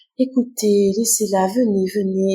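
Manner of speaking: tiny, angel-like, calming voice. Retelling how Béatrice calmed the others: imitating Béatrice's little angelic voice. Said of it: "avec sa petite voix angélique".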